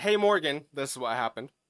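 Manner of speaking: ordinary talk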